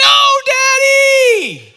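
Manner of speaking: put-on piercing, shrill child's screech, very high and very loud. Retelling a grandson being carried out of the room, imitating a child's screech. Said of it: "you hear this screech".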